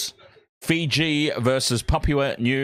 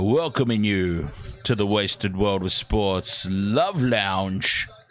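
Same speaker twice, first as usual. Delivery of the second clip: very deep, lowest-register, dropped lounge-host voice; 4 semitones lower than usual. Welcoming listeners to the wasted world of sports love lounge, dropped deep voice. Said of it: "I will drop my voice. We'll go even even lower, even lower".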